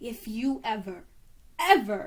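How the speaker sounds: slow, horrible snakelike woman's voice. Reading a story, a mother speaks to a boy holding out his fingers, in a horrible snake woman voice. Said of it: "Mama's horrible snake woman voice came out again".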